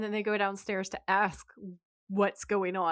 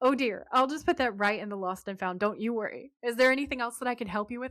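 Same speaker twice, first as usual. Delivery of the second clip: mimicked, overly chipper, cheerful tone; 4 semitones higher than usual. Retelling what a man said, mimicking an overly chipper tone. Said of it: "He's like too chipper".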